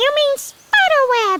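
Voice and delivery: very high-pitched spider voice. Narrator reads an unseen spider replying to the girl, very high-pitched voice. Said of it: "A very high-pitched voice replied".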